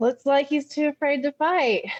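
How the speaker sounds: booming, very loud, high-pitched jeer. Character steps back and addresses the crowd after declining a match, loud voice. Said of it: "in a loud voice".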